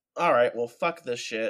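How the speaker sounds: ordinary delivery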